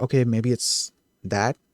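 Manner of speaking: ordinary talk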